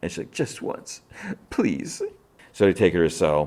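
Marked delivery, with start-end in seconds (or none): 0.3-2.0 very high, close-to-tears pleading voice. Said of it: "close to tears".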